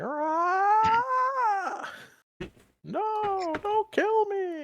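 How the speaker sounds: very high, loud, shrill gnome screech, drawn-out aah. Voicing a gnome that immediately starts screeching at the party, screeching gnome. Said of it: "starts screeching like".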